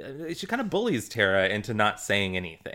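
ordinary talk

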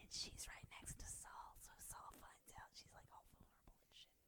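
hushed, very soft whisper. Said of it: "this is my whispered guess in the microphone".

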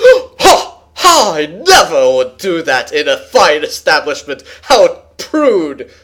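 haughty, snooty put-on voice, swooping and drawn-out. Speaker describes how Professor Finian sounds, imitating Professor Finian, stuck-up. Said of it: "she does really good at sounding so stuck up".

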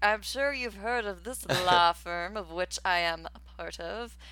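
put-on proud, snooty lawyer voice. Acting out a man's proud lawyer moment, mock-proud, snooty lawyer. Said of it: "his proud, snooty lawyer moment".

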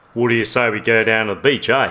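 authentic-sounding Aussie accent. Comparing a character's two accents, the speaker tries the better australian accent. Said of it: "That was better".

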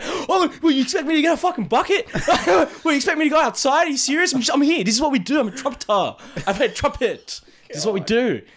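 very high, touchy, defensive outburst. Retelling how the other speaker reacted when teased: imitating someone being defensive. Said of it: "you got so defensive".

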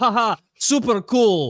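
put-on drawn-out, very slow, very high Eastern European accent. Imitating how a fighter would reply to a challenge: imitating an eastern european accent. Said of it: "he would respond like an Eastern European guy".

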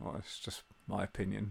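very quiet mumble under the breath. Retelling a man's reply to a passenger on a train: imitating someone muttering under his breath. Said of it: "kind of half under his breath".

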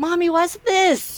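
put-on high-pitched, slow little-kid voice.

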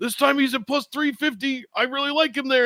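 pushed, strained, very high-pitched voice. Mocking fight bettors who keep backing the same fighter, mock-strained bettor impression. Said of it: "did your impression of me sound like I have to shit?".

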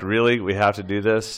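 normal talking voice

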